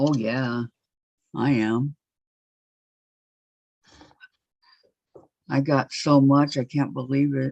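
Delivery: sarcastic-sounding. Answering whether everyone is happy with their Christmas gifts: sarcastic tone. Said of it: "you're sounding sarcastic there in that tone".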